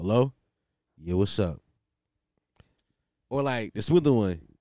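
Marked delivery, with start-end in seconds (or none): 0.0-1.6 slightly lowered, deeper voice. Showing how one answers when a girl calls: a little deeper voice. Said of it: "make their voice a little deeper".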